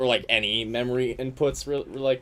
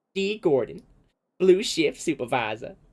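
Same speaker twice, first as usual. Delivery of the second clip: high, fake country girl accent, laid on badly; 5 semitones higher than usual. Reading a line after announcing a voice attempt: really bad country girl accent. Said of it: "I could do a really bad country girl".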